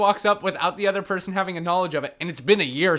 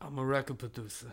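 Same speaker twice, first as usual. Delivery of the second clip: very soft, hushed delivery under the breath; 5 semitones lower, 13 dB quieter than usual. Imitating a man who tells girls he is a record producer: Jonathan London impression. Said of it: "is that your Jonathan London impression?".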